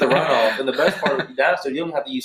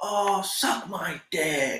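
put-on voice, higher and quieter; 4 semitones higher, 7 dB quieter than usual. Retelling a big fan reacting to the refs' incomplete call, imitating how the fan said it. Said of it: "just the way he said it".

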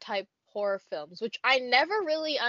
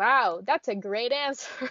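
sarcastic-sounding. Reacting to the other speaker's answer: sarcastic-sounding. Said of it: "That sounds so sarcastic".

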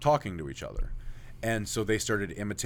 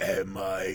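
talking as if through a burp. Retelling what the thing would say, talking as if through a burp. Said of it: "like talking, but like through a burp almost".

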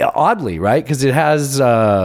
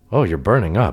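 usual speaking voice

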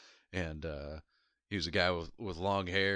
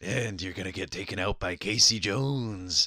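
big, loud, funny brute voice; 5 dB louder than usual. Retelling how a character talked in the animated series: imitating Casey Jones's funny voice. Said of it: "he talked funny, too".

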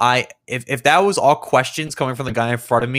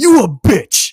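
shrill, very high, loud yelling outburst; 12 semitones higher, 7 dB louder than usual. Retelling a drive-thru video, imitating a customer yelling loudly. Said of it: "loud as shit".

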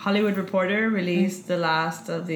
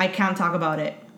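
plain

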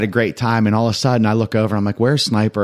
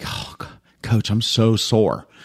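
slow, hushed whisper. Retelling what an athlete quietly said to the coach: imitating a whisper. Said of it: "whispered to me, she's like".

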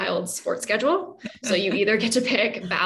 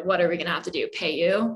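sarcastic, much lower pitch; 3 semitones lower than usual. Speaker recalls their mom offering to pay them: retelling a sarcastic question. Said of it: "sarcastically saying".

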